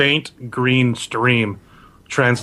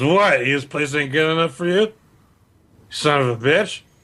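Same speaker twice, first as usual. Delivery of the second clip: put-on drunk man voice, higher; 4 semitones higher than usual. Narrator voicing a drunk human who overhears the group, drunk character voice. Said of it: "this drunk human hears you".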